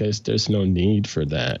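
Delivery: ordinary talk, nothing marked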